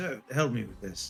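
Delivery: hushed whispering. A storyteller voices a character who looks around before asking for help, whispering. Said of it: "he whispers".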